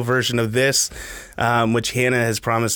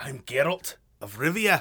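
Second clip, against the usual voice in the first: put-on slow, deliberate speech in a Scottish accent; 2 semitones higher, 8 dB quieter than usual. Discussing voicing Geralt like the audiobooks, the speaker tries it: Geralt with Scottish accent. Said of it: "Why was he Scottish in the audiobooks?".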